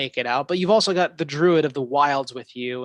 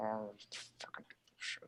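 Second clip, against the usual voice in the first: whispered, breathy growl under the breath; 5 semitones lower, 24 dB quieter than usual. Voicing a character who growls at a generous offer: growling. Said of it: "You can hear kind of Hobby growling".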